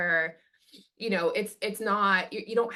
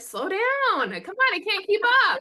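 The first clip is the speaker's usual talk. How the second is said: mock very high, shrill, loud, swooping gadget-voice yell; 12 semitones higher, 5 dB louder than usual. Voicing an overloaded phone yelling at its owner: voicing a phone yelling. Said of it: "my computer and my phone yell at me".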